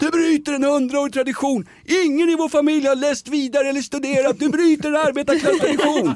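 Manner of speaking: mock-furious yelling. Speaker retells his dying father yelling about the speaker's son Erik, retelling a furious shout. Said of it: "Då skrek ju farsan".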